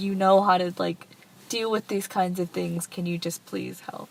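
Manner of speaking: ordinary delivery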